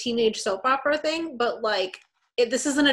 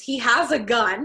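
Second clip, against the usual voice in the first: ordinary talk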